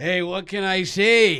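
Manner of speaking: put-on slight Scottish accent, high. After being told he's more Shrek, answering in a Shrek Scottish accent. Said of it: "Was that the Scottish accents?".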